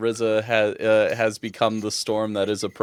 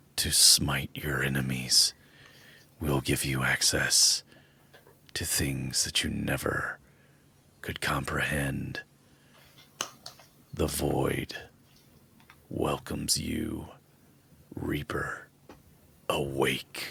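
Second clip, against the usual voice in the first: hushed voice seeming to call up from the depths; 8 semitones lower, 8 dB quieter than usual. A voice from a crystal speaks to the sleeper, calling them Reaper: voice from somewhere deep. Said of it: "a voice from it speaks from somewhere deep".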